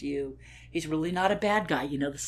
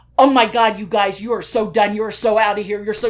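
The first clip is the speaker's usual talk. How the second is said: put-on scolding tone, higher and louder; 4 semitones higher, 13 dB louder than usual. Retelling how a young guard berated the other guards: imitating someone berating. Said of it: "he's just berating them".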